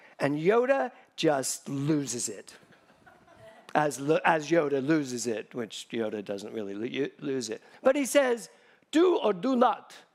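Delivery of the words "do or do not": put-on Italian accent, pitched higher. Retelling a scene between Luke and Yoda, Yoda impression gone Italian. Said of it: "he's Italian".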